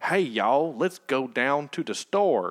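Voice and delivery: slow, thick, exaggerated fake movie Southern accent. Mocking how Hollywood movies do Southern accents: exaggerated Hollywood Southern accent. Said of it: "Hollywood thinks Southern accents are all like".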